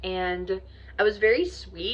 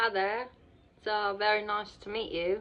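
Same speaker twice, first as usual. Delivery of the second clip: put-on, attempted British accent; 4 dB quieter than usual. Speaker tries out a British accent for viewers, attempted British accent. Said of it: "that was my attempt to do a British accent".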